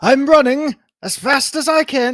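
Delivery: shrill, exaggerated, horrible British accent, high and loud. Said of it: "our takes on horrible British accents".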